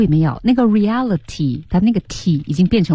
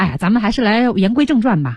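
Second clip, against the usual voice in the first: ordinary talk, nothing marked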